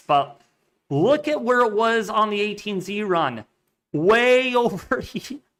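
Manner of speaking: laughing through the words, talking through giggles. Speaker showing listeners a plot from a run: laughing while talking. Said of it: "I'm laughing".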